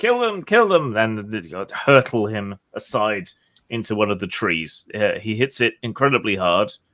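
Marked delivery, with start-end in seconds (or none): 0.0-1.0 piercing, shrill, high-pitched screaming. Voicing a herald screaming as a fighter slams into him: screaming. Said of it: "while he's screaming".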